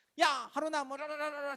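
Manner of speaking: put-on high-pitched, heated, angry ranting babble. Acting out a mom who gets angry and rants: imitating an angry mom ranting. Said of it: "열이 받아. 그럼 막 떠들어".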